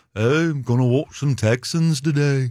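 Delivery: put-on British accent. Imitating a fan in liverpool picking a team: british accent. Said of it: "British accent".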